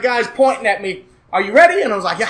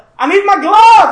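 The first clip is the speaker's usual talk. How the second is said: very loud, very high, shrill yelling; 11 semitones higher, 8 dB louder than usual. Recounting a race, retelling a yell at a son standing by the track. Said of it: "And I yell at him".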